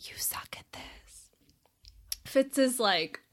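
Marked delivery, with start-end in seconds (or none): 0.0-1.3 very quiet, low, breathy, hushed whisper. Retelling a book scene where a character warns another: acting out a low hushed whisper. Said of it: "in a low, hushed whisper tells him".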